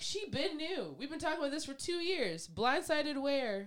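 exasperated, high, drawn-out, incredulous tone. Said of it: "and Harry was like".

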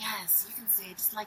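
sultry, sexy, sugary sweet voice. Showing how to say the show's name: sexy and sweet voice. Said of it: "trying to make it sound all sexy and sweet".

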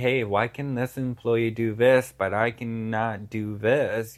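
ordinary talk

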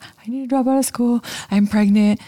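high, tearful bawling through every word. Retelling a meeting with a vice president, the speaker quotes their past self: retelling crying. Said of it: "I'm bawling".

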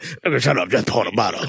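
manner of a habitual heavy drinker. Joking about how alcoholics would really talk: imitating an alcoholic talking. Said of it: "Alcoholics would be more".

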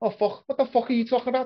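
very high, poor put-on Scouse accent. Showing how somebody might suddenly sound, the speaker does a poor Scouse accent. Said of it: "that was me doing a poor Scouse accent".

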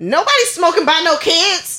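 high, instant, defensive tone. Retelling a smoker's reply to a parent, imitating a defensive retort. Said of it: "immediately gets defensive".

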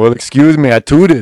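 booming, very loud, high-pitched, belted proclamation. Imitating Arnold Schwarzenegger apologizing for passing gas: Arnold Schwarzenegger impression. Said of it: "It's not my best Arnold".

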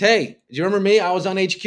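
put-on high street shout. A speaker who was on a nightly show jokes about life after it; mock street shouting. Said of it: "I'm shouting on, on the streets".

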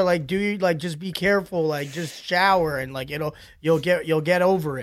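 ordinary delivery

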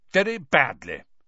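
peevish, irked, irritable tone. Answering a question called up to his window, peevish. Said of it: "said Percy peevishly".

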